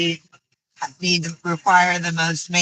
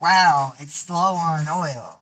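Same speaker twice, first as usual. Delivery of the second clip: put-on very slow, drawn-out sarcastic drawl. Showing a friend how they should have reacted, sarcastic wow. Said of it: "the sarcastic wow".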